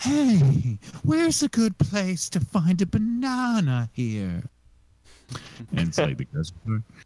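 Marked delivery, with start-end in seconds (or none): 0.0-4.4 high, slow, drawn-out stand-up comedian voice. Retelling what a comedian asked once the mics were off: Emo Philips voice. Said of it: "is a comedian who talk like this".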